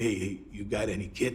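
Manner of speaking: put-on heavy, laid-on New York accent. Retelling how a man spoke directly to the listener, in Jimmy Blaze's thick New York accent. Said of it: "he's got this thick New York accent".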